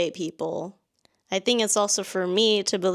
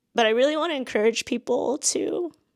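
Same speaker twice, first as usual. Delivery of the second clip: on the verge of crying, tearful, pitched-up voice; 5 semitones higher than usual. Explaining why she made videos about quitting her job, tearful. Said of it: "it's not a [name] video if I'm not crying".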